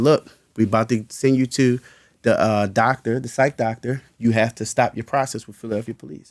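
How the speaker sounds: usual speaking voice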